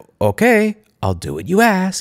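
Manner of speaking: put-on grudging, passive-aggressive tone. Retelling an employee's reply to a two-hour deadline: imitating a passive-aggressive tone. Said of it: "with that weird kind of passive-aggressive tint in the voice".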